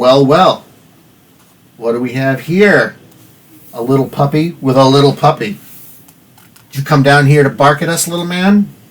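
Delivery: surly street-tough voice. Voicing a surly porch-sitter who spits and sneers at the newcomer: surly human on a porch. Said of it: "looks at you and says".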